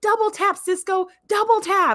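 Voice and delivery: put-on high yell. Recounting watching Sisko on screen, reenacting the yell: retelling a yell at the screen. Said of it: "I was yelling".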